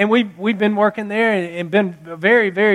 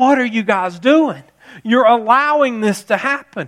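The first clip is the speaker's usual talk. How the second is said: impassioned, urgent pleading in broken English; 2 semitones higher than usual. Retelling what a businessman told them: imitating a passionate plea in broken English. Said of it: "through broken English, and he's so passionate".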